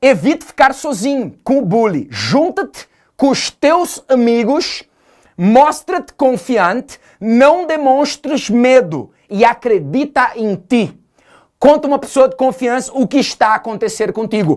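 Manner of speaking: Portuguese accent as spoken in Portugal. Carrying on showing how someone from Portugal talks, in a European Portuguese accent. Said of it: "É perfeito o português de Portugal".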